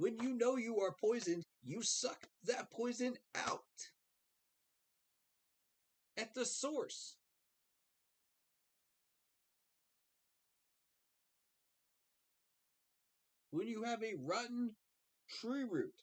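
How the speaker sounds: heated, worked-up rant pitched way up. Ranting to chat after losing to the Giants: worked up. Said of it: "I'm getting worked up again".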